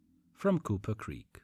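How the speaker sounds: ordinary delivery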